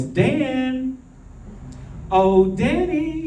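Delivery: put-on lovely voice. Storyteller voices a mother coming to get her son, putting on a lovely voice. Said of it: "she said in a lovely voice".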